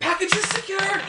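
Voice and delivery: shrill, very high, loud, in-character shouted call. Playing a character sneaking along a wall, announcing success: in-character yell.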